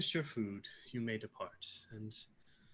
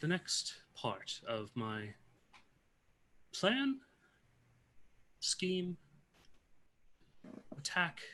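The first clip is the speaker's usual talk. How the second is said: slow, high-pitched voice of a water spirit; 6 semitones higher than usual. Acting a water elemental speaking to the players, in a water elemental character voice. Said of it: "I think she's made entirely of water. / maybe on the verge of water elemental, / So she speaks to you and says, / Yes, I remember seeing things such as this when me and my family fled. / I imagine it".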